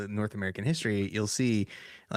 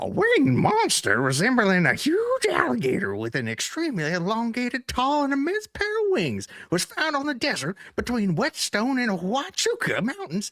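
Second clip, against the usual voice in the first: put-on old prospector voice, louder; 5 dB louder than usual. Reading a news item aloud in the voice of an old prospector. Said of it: "Read it like an old prospector who's too old to be in the mines and now he's taking on the news".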